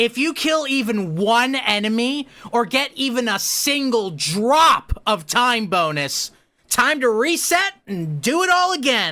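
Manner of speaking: lively, energetic, high-pitched presenter energy throughout. Showing how to deliver a line to get people interested, energetic delivery. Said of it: "You put the energy behind it".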